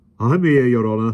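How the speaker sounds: breathless, puffing, out-of-breath panting. Reading a story aloud, the policeman answers: panting. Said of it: "the policeman panted".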